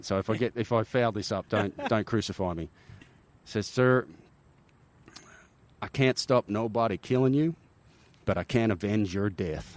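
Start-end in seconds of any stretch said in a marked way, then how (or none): 3.7-9.8 put-on best-attempt Texan accent. Retelling what a man told him, in his best Texan accent. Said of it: "I'm gonna try to put on my best Texan accent here".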